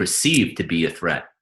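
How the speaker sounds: perceive leaned on heavily with hard stress. Asking what you believe is real: strong stress on perceive. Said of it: "you emphasize the word perceive".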